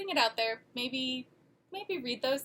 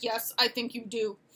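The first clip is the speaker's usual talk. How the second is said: put-on stern voice. Retelling a father's reply about getting the recall fixed: imitating dad's stern voice. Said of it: "in his very stern voice".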